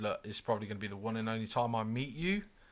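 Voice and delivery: ordinary talk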